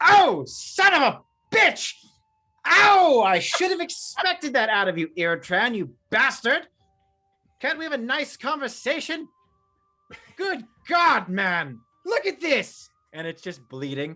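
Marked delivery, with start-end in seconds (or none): 0.0-12.9 loud, pained, outraged cries, very high-pitched. Voicing Eston after a hand axe sticks in his shoulder: Eston hit by an axe, angry. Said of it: "the hand axe sticks into his shoulder, and he goes".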